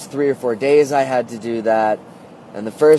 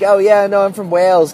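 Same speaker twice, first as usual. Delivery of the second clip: high, raised, really fake put-on British accent; 8 semitones higher, 5 dB louder than usual. Retelling answering people who asked if they were actually British: really fake British accent. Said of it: "I put on like a really fake British accent".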